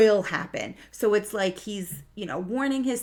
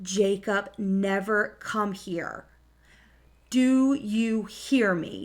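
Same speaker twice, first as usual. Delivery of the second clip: mock frightened, slow, serious, stern, scared tone. Retelling a warning to young Jacob: imitating a loud, scared warning. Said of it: "It's loud, it's kinda serious and almost scared".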